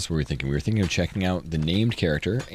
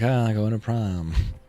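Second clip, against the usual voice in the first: put-on sad joking tone, higher pitch; 3 semitones higher than usual. Retelling how Mary, a prom chaperone, talked: imitating Mary's sad joking. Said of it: "like, sad jokey".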